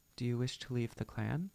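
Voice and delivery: plain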